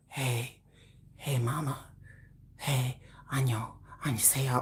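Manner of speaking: very soft, hushed, slow, unhurried voice. Imitating a K-pop star greeting fans on video: imitating V. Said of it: "V be all like this".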